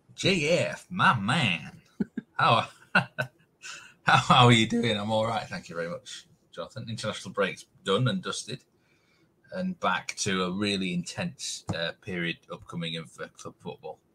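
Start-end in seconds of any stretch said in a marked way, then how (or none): 0.2-5.0 put-on American accent, very slow and high. A podcast host greets his co-host at the start of an episode, in a put-on American accent. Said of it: "you gone for a bit of an American accent there".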